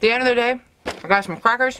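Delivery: talking with mouth full. Checking back in at the end of the day, talking with mouth full. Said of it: "I probably should chew and swallow what's in my mouth".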